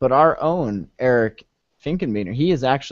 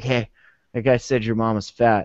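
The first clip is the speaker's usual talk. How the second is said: put-on whisper, lower pitch; 3 semitones lower than usual. Acting out someone stirring up two sides against each other: mock whisper. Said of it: "walking up to 'em and whispering".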